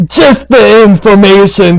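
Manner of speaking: menacing, intimidating tone held in check, big voice hinted. A player's character glaring to intimidate someone, in a big booming voice. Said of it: "in a big booming voice".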